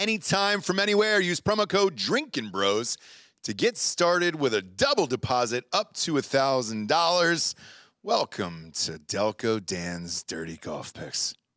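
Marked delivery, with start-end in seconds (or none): 8.0-11.4 unenthusiastic, low-energy, no excitement at all. Welcoming listeners to the golf picks segment, sounding unexcited. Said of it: "You don't sound that excited".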